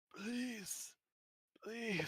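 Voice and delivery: very high, raspy, gasping, pleading. Game master voicing a dying man who calls out to the players, raspy, gasping for air. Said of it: "between grasps of air and a raspy voice".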